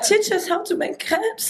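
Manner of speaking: very high, deliberately dumb, ditzy bimbo voice. Retelling asking a partner for a lesson: playing the dumb bimbo. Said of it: "we play a little bit like the dumb bimbo".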